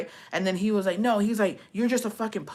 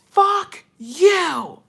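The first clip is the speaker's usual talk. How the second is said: unhinged, shrill, very high, full-volume crazed screaming; 10 semitones higher, 9 dB louder than usual. Retelling a fight, reenacting how you screamed at him: retelling a crazy scream. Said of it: "I screamed like a crazy person".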